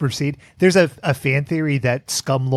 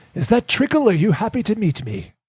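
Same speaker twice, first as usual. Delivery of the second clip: put-on old man spy voice, pitched slightly up; 7 semitones higher than usual. Playing a game, asked for a Bondism: old man James Bond voice. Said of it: "that's old man James Bond?".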